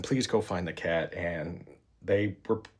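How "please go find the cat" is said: ordinary delivery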